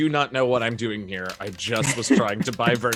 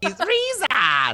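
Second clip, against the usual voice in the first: put-on goblin voice, higher; 3 dB louder than usual. Greeting a goblin by repeating its name in goblin voice. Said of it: "I didn't use my best goblin".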